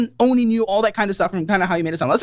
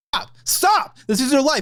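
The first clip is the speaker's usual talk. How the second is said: emphatic, insistent, hard stress on each stop; 4 semitones higher than usual. Telling another speaker to stop: yelling. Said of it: "What are you fucking yelling so much?".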